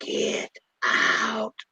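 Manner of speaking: ghostly, breathy, spooky haunted-house whisper. Doing the voice heard in haunted houses: haunted house voice. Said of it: "that them haunted houses voice".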